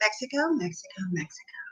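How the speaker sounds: very quiet, barely audible whispered reading. Reading a viewer comment aloud, whispering. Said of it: "like you're whispering".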